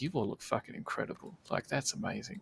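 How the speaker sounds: put-on breathy, breathless whisper full of amazed awe. Retelling how a rider reacted to their wagon: imitating a shocked, amazed man. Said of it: "he was just shocked".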